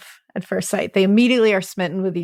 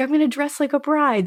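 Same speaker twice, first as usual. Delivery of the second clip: put-on, all-excited, eager can't-wait chatter; 7 semitones higher than usual. Retelling how she got ready to meet him: imitating excited talk. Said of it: "And she's all excited".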